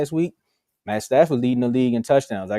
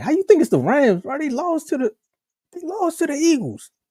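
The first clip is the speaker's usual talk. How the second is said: put-on riled-up Philly accent, very high and swooping. Voicing what some people would say to a Rams pick, in a mock-angry Philly voice. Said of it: "in my Philly anger voice".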